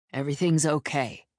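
ordinary delivery, nothing marked

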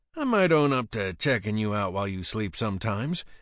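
plain

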